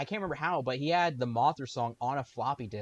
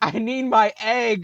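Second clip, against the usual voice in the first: very loud, very slow, drawn-out high scream; 9 semitones higher, 12 dB louder than usual. Doing a bit about the scene where the twins talk to Mothra: imitating Mothra screaming. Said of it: "like screaming at them like".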